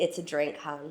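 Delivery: mock no-nonsense, deadpan, matter-of-fact tone. Retelling what a customer at the bar said: imitating a deadpan serious customer. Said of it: "deadpan serious".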